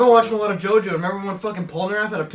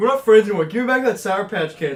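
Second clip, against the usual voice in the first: plain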